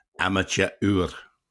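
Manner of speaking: imitated Scottish accent. Retelling what a man answered when asked why he stayed in, Scottish accent. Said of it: "forgive my Scottish accent".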